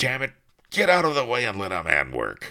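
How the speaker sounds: loud, swooping, angry snarl. Narrator reads the executioner answering the wailing key rabbit; snarling. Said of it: "the executioner snarled".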